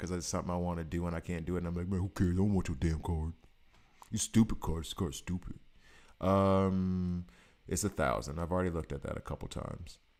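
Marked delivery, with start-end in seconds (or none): 1.9-5.5 spoiled, bratty, sulky tantrum. Acting out frustration at an unaffordable card: acting like a spoiled brat. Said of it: "I'm acting like a spoiled brat now".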